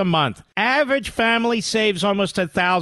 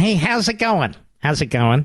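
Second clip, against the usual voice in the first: fake newscaster voice, like a cable news host; 3 semitones lower than usual. Mocking a TV host's greeting to his guest: mocking Jake Tapper impression. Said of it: "Fake Tapper".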